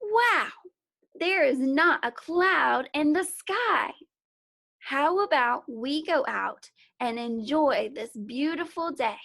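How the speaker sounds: expressive sing-song rise-and-fall intonation. Reading a story passage aloud to show reading with expression, voice rising and falling. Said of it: "Did you hear how my voice went up and down?".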